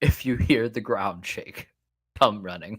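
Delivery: secret, hushed in-character whisper. Whispering a message to a character in a game: in-character whisper. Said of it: "I will whisper to Helga".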